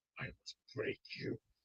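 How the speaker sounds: put-on hushed, whispered, menacing Russian accent. Threatening to break someone, sounding like the Russian from Rocky IV. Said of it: "I will sound just like that Russian from Rocky Four".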